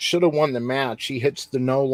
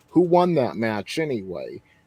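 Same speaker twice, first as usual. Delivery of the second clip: acted dry sarcastic tone with swooping sing-song; 3 semitones lower than usual. Retelling a wrestler's interview remark: imitating a sarcastic remark. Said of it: "he says sarcastically".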